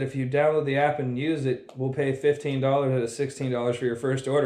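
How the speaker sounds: normal talking voice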